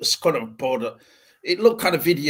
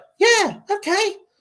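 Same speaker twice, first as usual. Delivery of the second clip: ridiculously high, raised put-on voice; 5 dB louder than usual. Mock how he talks in the trailer, putting on a ridiculously high Superman voice. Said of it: "in the Superman voice".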